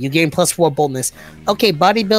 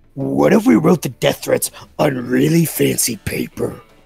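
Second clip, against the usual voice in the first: put-on demon voice; 2 semitones lower than usual. Voicing Damien after another character addresses him, in Damien's demon voice. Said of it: "demon voice".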